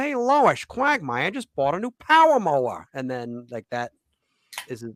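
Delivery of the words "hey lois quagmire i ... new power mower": very high cartoon voice with wildly swinging pitch. Retelling how a comedian who plays Peter Griffin does the voice: Peter Griffin voice. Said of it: "then he does the voice".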